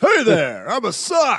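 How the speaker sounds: high put-on voice for a talking sock. Answering what the socks sound like: put-on sock character voice. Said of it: "What do they talk like?".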